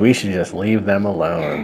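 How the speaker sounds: plain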